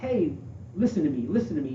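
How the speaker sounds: plain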